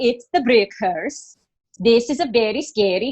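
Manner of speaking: put-on Swedish accent. Announcing they will talk like this now, doing a Swedish Chef voice. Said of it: "we're going to talk like this now".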